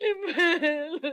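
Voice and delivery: crying out while sobbing. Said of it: "Bakit ka umiiyak?".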